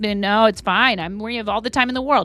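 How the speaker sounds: mock lackadaisical, careless tone. Imitating diners who act unhurried with their server: imitating a lackadaisical diner. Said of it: "they act like they're all lackadaisical".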